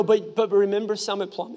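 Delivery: ordinary delivery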